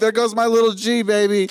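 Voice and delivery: very high, loud gleeful cry. Acting out the mom running around the house: imitating his mom. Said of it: "She's just running around the house like".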